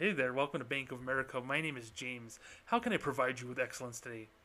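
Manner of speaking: nerdy, boring, by-the-book bank-teller voice. Podcast host contrasting his bravado with how a normal banker talks, nerdy normal-banker voice. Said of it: "if I talk like a normal banker".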